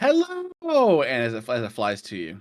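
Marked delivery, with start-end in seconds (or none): 0.0-1.0 talking raven voice, shrill, very high, very loud. Voicing a raven that mimics speech as it flies over: raven mimicking a human voice. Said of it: "ravens have mimicry, and you hear it go".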